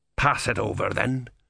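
ordinary delivery

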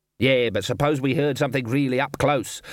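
plain

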